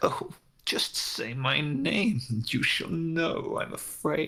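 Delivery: words bubbling through chuckles while talking. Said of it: "He starts laughing".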